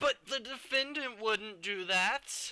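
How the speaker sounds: deliberately whiny. Demonstrating an overly emotional first response in court: intentionally whiny. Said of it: "that was intentionally whiny".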